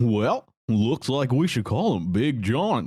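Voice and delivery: put-on cartoon dog voice. Asked by another speaker to do the line, do a Goofy voice. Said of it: "Can you do the Goofy line here".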